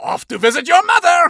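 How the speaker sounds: very high, loud, very poor fake French accent. A storyteller voices a mysterious entity speaking to two characters: very poor French accent. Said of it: "speaks in a very poor French accent".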